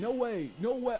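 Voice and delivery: casual, unpolished bro-style sports announcer voice. Reacting to a clip, imitating the announcer: imitating the announcer. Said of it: "You just hear him being like".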